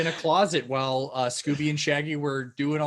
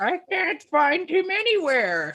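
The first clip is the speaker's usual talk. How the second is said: put-on swooping high granny voice; 13 semitones higher, 4 dB louder than usual. Acting out Grandma heard around an old house: stereotypical old woman voice. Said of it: "Old woman voice".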